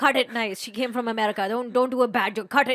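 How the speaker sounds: loud, forceful shouted yell. Retelling the cousin yelling at a man holding a machete, imitating cousin yelling. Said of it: "she's yelling at a man".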